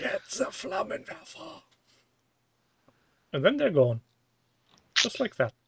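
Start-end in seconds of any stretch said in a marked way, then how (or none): 0.0-1.6 small inner voice, higher and quieter. Describing spraying spiders with a lighter: little inside voice. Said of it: "a little inside voice goes".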